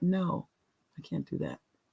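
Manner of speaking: kind, soft, breathy, hushed near-whisper. Showing listeners how to refuse someone, in a lowered voice. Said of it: "I even lower my voice".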